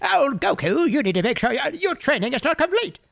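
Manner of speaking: very high, sing-song, swooping character voice. Guessing how a cartoon character sounds without having seen him: Master Roshi voice. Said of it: "is Master Roshi the one that goes like this?".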